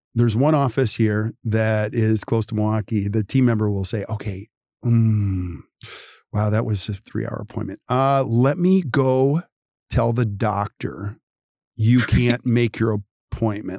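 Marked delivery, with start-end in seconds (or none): 4.0-13.8 mock very slow speech. Retelling how a team member answers a cancelling patient: imitating someone speaking very slowly. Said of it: "they say it very slowly".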